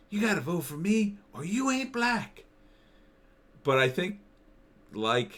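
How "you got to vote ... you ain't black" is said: slight put-on southern drawl, very high and light. Describing a politician's voice, the speaker imitates him with a slight put-on southern accent. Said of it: "there's a little bit of a southern thing".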